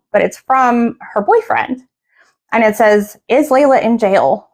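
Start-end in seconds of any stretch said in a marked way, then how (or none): none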